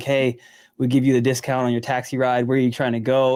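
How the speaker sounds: usual speaking voice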